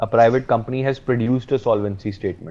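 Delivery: normal talking voice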